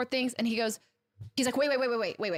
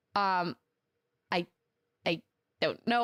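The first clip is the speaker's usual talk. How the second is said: reenacted stutter, slower; 4 semitones lower than usual. Retelling being questioned about a contract, reenacting own stammer. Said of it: "I start stuttering and I start crying".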